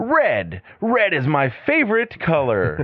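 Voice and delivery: very slow commercial voice, swinging high in pitch. Imitating a sports announcer answering a fan's question: Mike Goldberg commercial voice. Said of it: "it just sounds like that to me".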